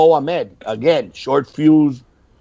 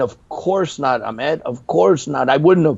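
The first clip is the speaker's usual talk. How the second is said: usual speaking voice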